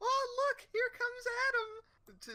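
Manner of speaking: very high, loud, slow excited gushing. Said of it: "she was so excited".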